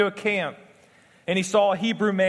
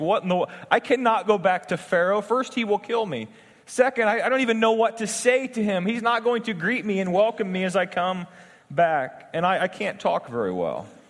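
plain

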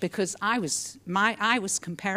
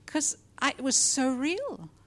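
normal talking voice

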